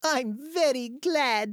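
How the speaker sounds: bright, very high-pitched, glad, happy voice. Piglet speaks to Eeyore about the gift he gave, happily. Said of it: "said Piglet happily".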